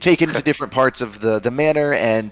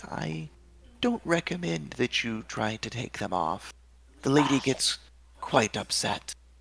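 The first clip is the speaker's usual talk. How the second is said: very sweet, much quieter and faster; 3 semitones higher, 9 dB quieter than usual. A storyteller voices an older woman character addressing the players, very sweet. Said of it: "she says just very sweetly".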